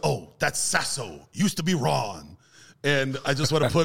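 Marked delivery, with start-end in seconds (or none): 0.0-2.4 imitated movie gangster voice. Retelling a movie scene where a nightclub owner is yelled at: Al Pacino impression. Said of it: "That was a decent Pacino impression".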